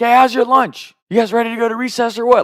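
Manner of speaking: very high yell carrying across a room. Retelling yelling across the lunch tables to his buddies in middle school, retelling a yell. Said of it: "I just started yelling across the lunch tables".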